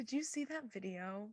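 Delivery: very quiet, hushed half-whisper. Chatting with a co-host, asking about a video: half-whispering. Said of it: "I don't know why I'm whispering".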